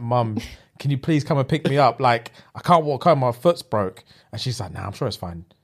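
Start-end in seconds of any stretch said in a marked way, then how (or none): 0.0-4.0 mock crying, tearful, pleading, begging tone. Speaker retelling a childhood injury, acting out begging their mum, retelling tearful begging. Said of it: "I remember crying in pain and I begged my mum".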